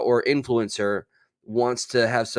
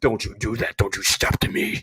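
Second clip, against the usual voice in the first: put-on demonic voice. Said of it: "a little demon-esque".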